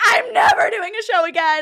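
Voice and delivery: put-on, very high, loud, tearful sobbing wail. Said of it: "I'm sobbing".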